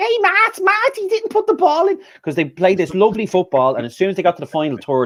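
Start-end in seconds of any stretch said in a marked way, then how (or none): 0.0-2.0 put-on full Scouse accent, very high-pitched. Retelling how McManaman reacted to Arsenal's play, McManaman impression, high Scouse. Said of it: "went full scouse when uh, like proper high pitch".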